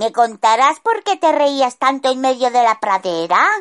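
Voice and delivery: pointed, challenging delivery. A wife questions her husband Pastorcillo over soup, in a challenging tone. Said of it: "le dijo su esposa en tono desafiante".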